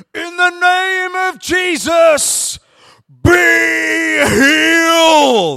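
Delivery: top-of-the-lungs preacher shout, very slow and high. Retelling how Kev shouted in front of a queue, Kev's TV-evangelist shout. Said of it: "he shouts at the top of his voice in Kev's best kind of like TV evangelist way".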